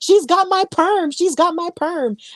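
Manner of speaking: fake, high-pitched yelling. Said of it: "Gloria was yelling".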